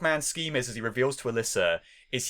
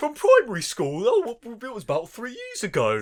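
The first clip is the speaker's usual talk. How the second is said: put-on bumbling British boy voice, higher pitch; 9 semitones higher than usual. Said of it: "sounds a little bit like it as well".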